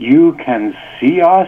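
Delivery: slow, astonished, wondering tone. Retelling a dream, quoting what they said to a man, retelling a surprised question. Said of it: "in a surprised tone".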